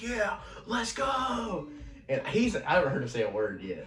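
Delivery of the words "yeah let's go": put-on full-throated scream, very high. Retelling riding the biggest ride with hands up, imitating own past scream. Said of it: "hands up, screaming".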